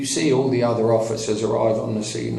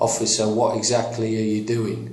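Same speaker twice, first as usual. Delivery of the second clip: usual speaking voice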